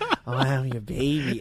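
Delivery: slow, creepy put-on drunken voice. Retelling what a drunk woman said to her, creepy put-on voice. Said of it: "why are you giving her that fucking creepy-ass voice".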